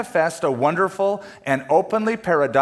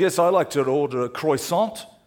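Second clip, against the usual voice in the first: big put-on English accent, slower. At a donut shop, disguising his voice to order from the counter guy, big put-on english accent. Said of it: "I come with this big English accent".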